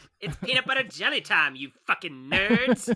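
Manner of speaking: put-on aggressive loud shout. Speaker announces Robert Irvine is back, then does a mock-belligerent Robert Irvine bit. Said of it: "He's getting more belligerent".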